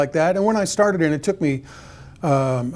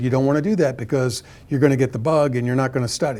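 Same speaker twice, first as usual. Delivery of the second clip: plain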